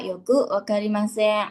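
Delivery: plain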